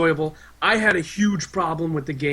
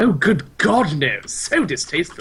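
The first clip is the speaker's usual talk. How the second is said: put-on posh, fancy, hoity-toity voice; 3 semitones higher than usual. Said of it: "So fancy".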